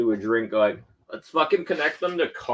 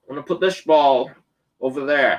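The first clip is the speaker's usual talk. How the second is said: loud Scottish accent; 3 semitones higher, 5 dB louder than usual. Telling a Scottish golf joke, speaker delivers it as a Sean Connery impression. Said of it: "I can do Sean Connery".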